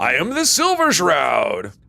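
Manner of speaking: very slow, swooping character voice, every word drawn out. Playing a game, trying the line in the hero's voice: Silver Shroud voice. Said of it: "Do the voice".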